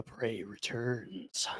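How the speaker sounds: sharp, piercing, echoing whisper. Game master voices an unseen voice from further in: piercing, echoing whisper. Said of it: "it whispers in a sort of piercing voice that echoes from further in".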